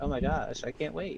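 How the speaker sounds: energetic put-on valley girl voice. Voicing a new shipmate who nods eagerly at the party, in a valley girl voice. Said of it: "almost like Valley Girl energy".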